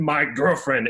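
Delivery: put-on growling, animal-like voice. Retelling what an old man said at reception: imitating a growling animal-like voice. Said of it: "in his animal style voice of his".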